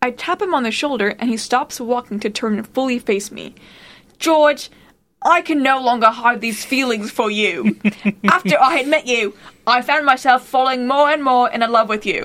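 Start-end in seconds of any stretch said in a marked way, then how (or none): 4.2-12.3 heavily laid-on, faked British accent. Speaker, doing a bit, declaring love to george: british accent. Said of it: "I love your British accent".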